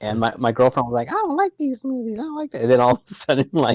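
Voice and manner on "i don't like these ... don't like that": very high-pitched voice. Retelling his girlfriend's reaction to the movies, imitating girlfriend's voice. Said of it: "that's my impression of my girl".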